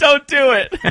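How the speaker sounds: mock yelling. Retelling what drivers yelled out the window: imitating drivers yelling. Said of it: "they would yell at the window".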